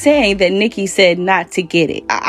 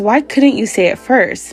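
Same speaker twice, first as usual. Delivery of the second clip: ordinary delivery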